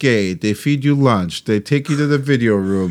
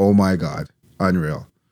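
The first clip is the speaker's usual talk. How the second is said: usual speaking voice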